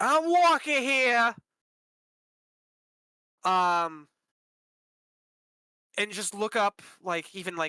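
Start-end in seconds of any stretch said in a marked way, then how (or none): 0.0-1.3 loud, high, put-on New York accent. Listing accents to practice, demonstrating a New York accent. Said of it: "the New York ones are always fun".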